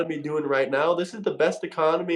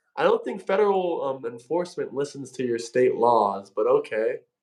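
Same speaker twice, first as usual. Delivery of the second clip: plain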